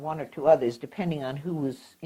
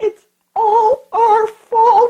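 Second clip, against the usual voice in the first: sob-choked, very high-pitched, loud, slow, drawn-out; 18 dB louder than usual. Retelling what Mama said to the family, imitating a sob in the voice. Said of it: "with a sob in the voice".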